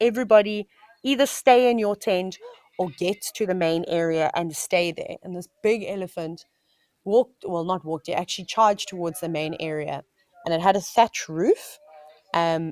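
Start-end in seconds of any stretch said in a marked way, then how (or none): none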